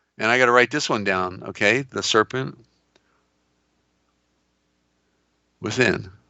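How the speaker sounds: strained, losing voice. Explaining a point while inviting callers to call in: hoarse, losing voice. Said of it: "Can see how losing my voice here".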